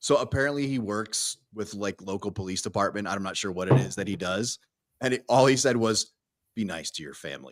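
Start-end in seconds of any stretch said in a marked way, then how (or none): 6.5-7.5 put-on very serious tone, lower and quieter. Retelling a suggestion for the safety brief: imitating Alex's really serious tone. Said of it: "like, a really serious tone".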